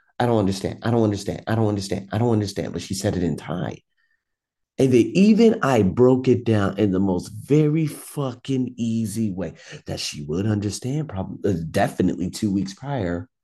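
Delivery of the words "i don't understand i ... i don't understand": annoyed, with a little attitude, repeated. Retelling how a girl in class kept repeating herself, imitating Pat's annoyed attitude. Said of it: "she just kept saying it with a little bit of an attitude".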